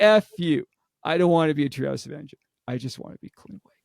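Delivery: put-on defiant voice. Author retelling a character's reply from his book, acting out a defiant retort. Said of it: "And he's like".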